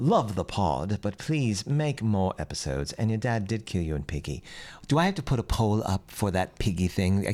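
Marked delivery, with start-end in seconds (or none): 0.0-4.4 put-on British accent. Reading a listener review aloud when asked, put-on British accent. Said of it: "What kind of accent should I use? British? All right, here we go".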